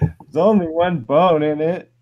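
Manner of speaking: high, slow, tearful wail through crying. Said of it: "through his tears".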